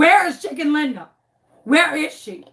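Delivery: put-on panicked, frantic, demanding voice. Retelling confronting a stuttering man, right in his face, mock-frantic. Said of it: "I am frantic".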